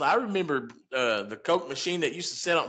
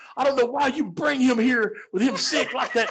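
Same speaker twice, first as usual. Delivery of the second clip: put-on angry voice, higher; 7 semitones higher than usual. Retelling a mother's complaint about him being brought over sick, imitating angry mother. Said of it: "And his mom was so mad".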